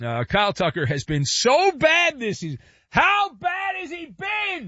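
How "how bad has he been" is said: shouting. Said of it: "Thanks for yelling".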